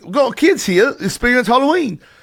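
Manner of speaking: put-on Australian accent. Retelling a story, quoting what a guy said, in an australian accent. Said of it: "That's a good accent".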